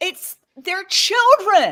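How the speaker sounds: loud, slow, tearful voice with a catch, overcome.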